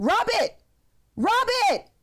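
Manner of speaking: put-on rising voice. Retelling the devil's urging in one ear: imitating a voice getting louder. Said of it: "the rub it gets louder and louder".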